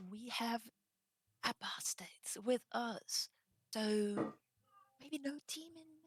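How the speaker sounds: muttered under breath. Speaking in character about apostates in the group: very low, lowered voice. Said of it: "I'm just lowering my voice really, really low".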